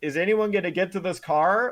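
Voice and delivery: acted-out frustrated, exasperated yelling. Retelling what was yelled at the tv during a wreck: imitating own yelling at the tv. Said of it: "what I was yelling at my T V about".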